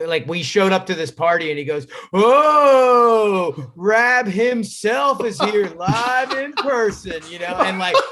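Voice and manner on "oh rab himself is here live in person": high, very slow, teasing mocking drawl, long drawn-out oh. Retelling how a friend teased them at a party: imitating Hoof Pate mocking. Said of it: "basically making fun of me".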